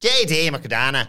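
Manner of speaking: put-on Irish accent. Saying a wrestler's new name after being asked to do it in the accent: put-on irish accent. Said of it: "We'll do it in the accent, obviously".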